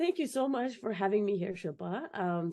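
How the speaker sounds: slightly hoarse, raspy voice. A guest thanking the host for having her on, with a slightly raspy voice. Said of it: "Sorry if my voice is a little raspy".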